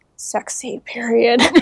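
imitated whisper. Retelling how a man answered a receptionist, retelling a whispered company name. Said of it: "like whispering the company name".

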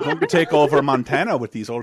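put-on German accent that slips and slides off. Playing around as the character, do a Johann Hex voice, losing the accent. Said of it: "I'm losing the accent".

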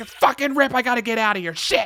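frantic, panicked cry, pitched very high. Retelling a horror scene, imitating a panicked cry. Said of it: "She's like".

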